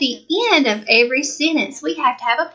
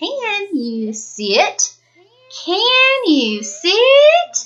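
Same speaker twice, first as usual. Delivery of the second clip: rising intonation on the word sit; 7 semitones higher than usual. Explaining punctuation and showing how a question sounds: rising question intonation. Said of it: "My voice still went up".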